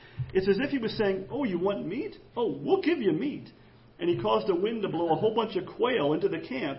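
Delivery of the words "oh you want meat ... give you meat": mock heavy sarcasm on every word. Retelling a story about what God said, acting out sarcastic words. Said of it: "my voice will make it sound sarcastic".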